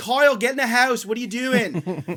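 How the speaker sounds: put-on South Philly accent. Retelling a neighbor calling her son inside: imitating a south philly accent. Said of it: "that incredible South Philly accent".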